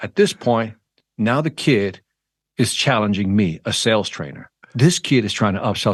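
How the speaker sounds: normal talking voice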